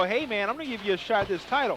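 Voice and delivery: ordinary talk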